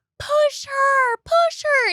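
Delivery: high-pitched shouting, like a crowd.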